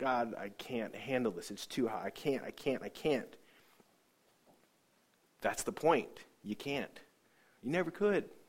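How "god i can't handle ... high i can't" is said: put-on sobbing, quieter and slower. Retelling what they cried out to God back then, reenacting sobbing. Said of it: "By this time, I'm sobbing".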